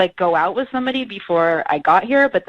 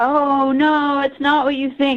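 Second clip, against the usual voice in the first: put-on sloppy, slurred drunk voice, pitched up; 7 semitones higher than usual. Retelling what a date said on the phone: imitating drunk slurred speech. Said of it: "he's all drunk and slurring".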